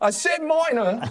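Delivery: wildly exaggerated, over-the-top British accent. Answering that his noble accent is weak: crazy british accent. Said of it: "this crazy British accent".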